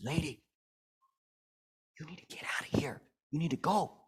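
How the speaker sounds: urgent, hushed whisper. Retelling what a cashier whispered to a customer, retelling a whisper. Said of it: "he bends over and he whispers to her".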